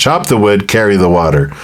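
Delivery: ordinary delivery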